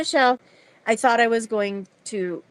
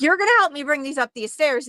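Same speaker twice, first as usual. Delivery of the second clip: put-on angry voice, higher pitch; 4 semitones higher than usual. Retelling demanding the delivery man carry groceries: retelling an angry demand. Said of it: "I was so mad because I'm like".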